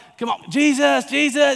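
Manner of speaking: mock very high, raw, raspy excited cheering shout. Telling of Jesus arriving, voicing the crowd waving palm branches, retelling a crowd yelling. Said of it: "They're yelling".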